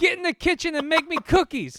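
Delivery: acted yelling. Retelling what Ezio yelled at her: imitating Ezio yelling. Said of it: "He yelled".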